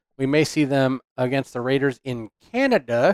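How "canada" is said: high put-on Canadian accent on Canada. Mentioning a game in canada, put-on canadian accent on 'canada'. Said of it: "I just used that as a chance to do my Canadian accent for one word".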